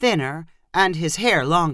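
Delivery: ordinary delivery, nothing marked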